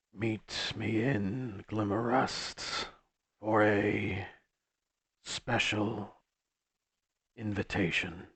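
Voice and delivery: heavily disguised, masked, altered voice with halting phrasing. Narrator voicing a blurry hologram's message from an obscured face, heavily disguised voice. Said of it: "voice, uh, heavily disguised sounding".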